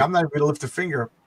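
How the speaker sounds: ordinary delivery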